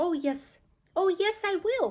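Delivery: small, high-pitched squeal. Reading a story aloud, Mike Teavee answers Mister and Missus Teavee in a tiny squeal. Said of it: "squealed the tiny voice of Mike T V".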